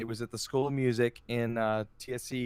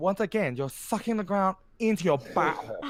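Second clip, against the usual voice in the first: put-on Japanese accent, pitched higher; 7 semitones higher, 3 dB louder than usual. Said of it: "I'm gonna do an accent here".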